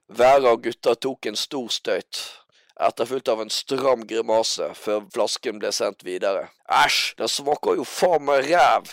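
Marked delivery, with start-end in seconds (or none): 6.8-9.0 grossed-out, disgusted cry. As the bottle is passed around, one of the lads speaks; shouted.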